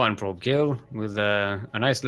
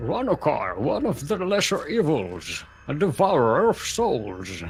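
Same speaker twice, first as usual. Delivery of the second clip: put-on aged character voice; 4 semitones higher than usual. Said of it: "I was trying to do the Kane voice".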